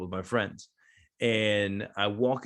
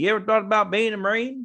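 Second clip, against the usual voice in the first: put-on very high, light, loud Florida accent; 13 semitones higher, 7 dB louder than usual. Recalling what a sergeant said on walking up to him, in Sergeant Tice's Florida accent. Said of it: "with his little Florida accent".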